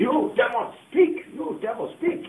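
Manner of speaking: very high, loud, slow, drawn-out commanding cry. Retelling a deliverance session, imitating a pastor commanding demons. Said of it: "he is commanding".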